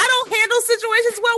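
very high-pitched mocking squeal.

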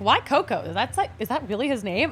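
normal talking voice

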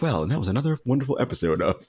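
soft, soothing radio announcer delivery. A show host redoing the episode sign-off; NPR voice. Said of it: "I went into NPR voice. I was like".

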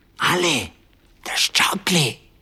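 stage whisper. Returning with both mugs, he calls to Ale in a loud whisper. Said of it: "he said in a loud whisper".

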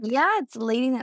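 plain

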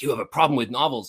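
imitated Australian accent. Retelling what he said to them, imitating his Australian accent. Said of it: "in his Australian accent".

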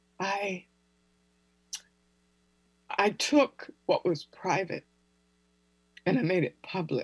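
voice welling with feeling. Telling how a private pain was made public, getting emotional. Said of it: "I'm getting emotional".

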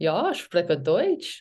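slow, careful German accent. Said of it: "You would say it with the accent".

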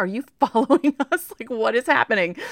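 high, loud, incredulous, laughing. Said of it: "They're like".

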